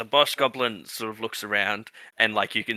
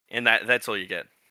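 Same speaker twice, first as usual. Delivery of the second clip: usual speaking voice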